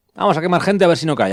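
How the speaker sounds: high, loud, fanatical cry.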